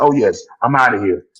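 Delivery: put-on smiling voice. Imitating a player smiling as he was driven off: imitating Tyreek smiling. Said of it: "smiling like".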